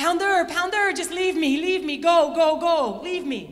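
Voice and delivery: loud, put-on French accent. Retelling a jog when an exhausted teammate stops: Carolyn's French accent. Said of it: "That's her French accent, the best I can do".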